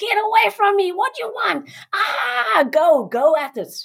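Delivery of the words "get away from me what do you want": crazed, unhinged, high, wild maniac screaming. Showing how to go into crazy mode rather than freeze: screaming like a maniac. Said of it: "Go into a crazy mode rather than a freeze mode".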